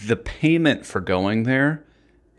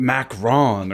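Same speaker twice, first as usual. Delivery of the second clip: put-on pretentious French accent. Imitating how a mother says french food: imitating mom's pretentious french accent. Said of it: "She's like".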